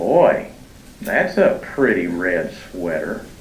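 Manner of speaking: mocking, sarcastic, put-on insincere praising inflection. Showing how inflection changes a compliment's meaning, sarcastic tone. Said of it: "my inflection said I don't like it at all".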